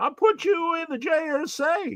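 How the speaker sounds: very high, slow hillbilly drawl. Imitating the comic artist who drew him into a comic: Mike Norton hillbilly voice. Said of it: "Mike Norton, uh, hillbilly voice".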